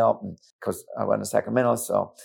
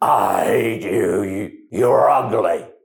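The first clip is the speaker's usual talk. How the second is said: very slow, growling, growly man's voice; 5 dB louder than usual. Retelling how a woman in a meeting turned to a man, growly man's voice. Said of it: "with a different voice, a man's voice, a growly voice".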